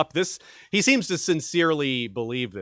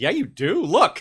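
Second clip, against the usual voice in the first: put-on precocious kid voice, higher pitch; 6 semitones higher than usual. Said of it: "he did it in a very, like, precocious way".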